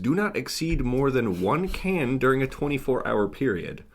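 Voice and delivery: ordinary talk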